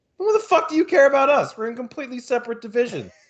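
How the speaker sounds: disbelieving, ranting tone.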